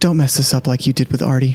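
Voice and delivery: hushed, whispered voice. Putting a hand on an ally's shoulder in character: whispering. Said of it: "whisper to you".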